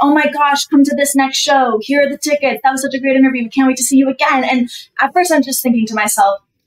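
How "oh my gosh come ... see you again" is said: ordinary talk, nothing marked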